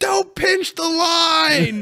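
very high shout with the line stretched out. Speaker re-enacting yelling into a bad phone line, retelling a yell. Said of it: "I'm like yelling".

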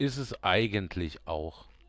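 eigentlich stressed, slow and loud. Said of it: "Betonung auf eigentlich".

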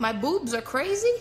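Yiddish-flavored delivery.

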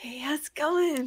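creepy voice, pitched a touch high. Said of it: "the creepy, um, "Hey".

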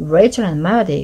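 plain reading voice

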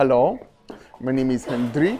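attempted authentic Dutch accent. Filming in Volendam, trying a really authentic Dutch accent. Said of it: "I'm gonna try and do a really authentic Dutch accent".

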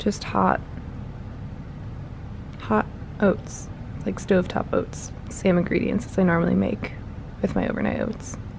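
soft, hushed, unvoiced whisper.

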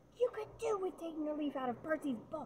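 very high, shrill, scolding yell. Narrator reads Mrs. Weasley prodding a finger in Fred's chest, yelling. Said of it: "yelled Mrs. Weasley".

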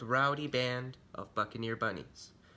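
ordinary delivery, nothing marked

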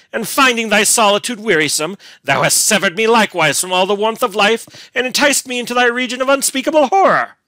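bitter, accusing scorn and anger. A man cries out at a woman with venomous scorn and anger. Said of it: "with venomous scorn and anger".

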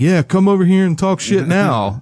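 high-pitched, mock goading, heckling yell. Imitating someone behind two bouncers, retelling a yell: imitating Dylan yelling. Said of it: "behind the two bouncers yelling".

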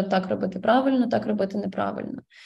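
plain

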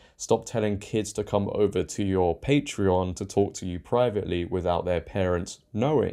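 ordinary talk, nothing marked

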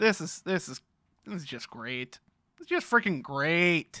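sarcastic, sardonic tone. Player missing one piece in a game that keeps going wrong, sarcastic. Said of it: "I'm sorry if I'm seeming very sarcastic".

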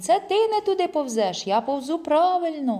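high, annoyed, irritated shouting. Yava answers the narrator's call from far off: shouting back. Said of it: "гукає він".

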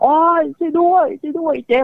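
put-on very high, pained, hurting cry. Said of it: "ยายสังวานตะโกนให้ช่วยแบบ".

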